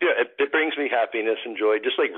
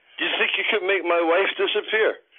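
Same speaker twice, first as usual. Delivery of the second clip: put-on sloshed drunk-guy voice, pitched high; 8 semitones higher than usual. Retelling how a drunk guy calls the magician over: imitating a drunk guy. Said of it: "and he's drunk".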